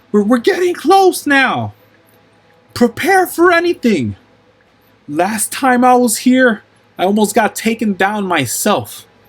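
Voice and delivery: very high-pitched scream. Game narrator voices a flying character calling to the party through rushing winds, screaming. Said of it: "in a in a screaming voice".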